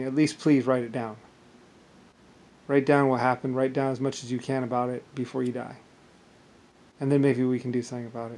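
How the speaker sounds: tearful voice, speaking through tears. Retelling own past words once said through tears: retelling a tearful plea. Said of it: "I did it through tears".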